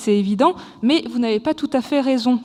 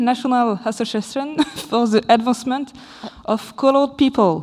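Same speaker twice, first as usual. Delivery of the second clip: accent from England. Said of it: "accent anglais".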